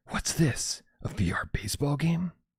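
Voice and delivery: horrible, slithery, drawn-out bad snake voice. Reading out a tip about a VR baseball game: horrible snake impression. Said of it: "That was a horrible, horrible snake impression".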